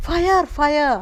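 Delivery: high-pitched mock yelling.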